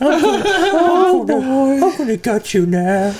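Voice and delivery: high, slow, drawn-out horror-movie menace. Mocking a cheap Winnie the Pooh horror movie, imitating Winnie the Pooh horror voice. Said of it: "started talking like this".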